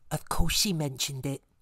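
hushed, whispered voice. A narrator reads Sally Strithiomimus's aside during a lesson, whispering. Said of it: "whispered Sally Strithiomimus".

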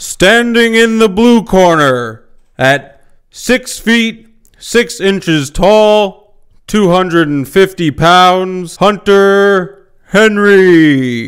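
booming boxing ring announcer voice. Speaker introduces Hunter Henry standing in the blue corner: boxing ring announcer voice. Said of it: "That was a pretty good voice".

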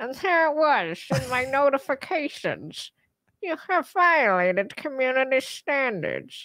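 cartoonish dad character voice. Speaker tries doing the voice while retelling a notification; Peter cartoon-dad voice. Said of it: "we're just trying to do the voice".

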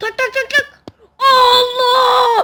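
high, loud yelling. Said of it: "[name], bağırma, sağır oldum".

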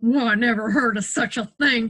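muttering. Another man, putting on his hat and coat, responds: muttered. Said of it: "muttered another man".

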